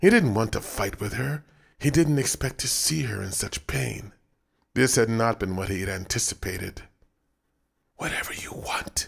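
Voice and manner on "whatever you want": hushed, soft whisper, barely voiced. A man speaks to a woman as her sobs begin to subside; whispering. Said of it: "he whispered".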